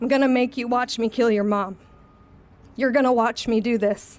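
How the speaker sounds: usual speaking voice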